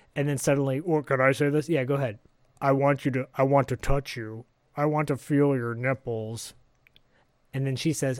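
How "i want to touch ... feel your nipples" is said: flat, halting, modulator-like delivery, much slower. Voicing the caller in the game scene, speak flat and level with broken-up speech. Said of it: "[name]. / it sounds like one of those voice modulators because he's trying not to pitch up or down. / He's trying to just sort of stay level and then break up his speech pattern, / It gets more sinist".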